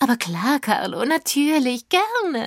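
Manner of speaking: sugary sweet, piping, fluting tone. Narrating the gang's reply to Kater Carlo's demand for proof; sweet fluting voice. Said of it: "flöteten wir".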